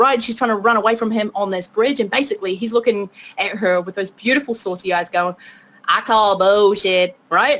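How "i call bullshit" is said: clumsy, bad put-on Southern accent. Speaker retells a man's line to a woman on a bridge, bad Southern accent. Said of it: "That was a really bad Southern accent".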